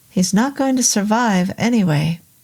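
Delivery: ordinary delivery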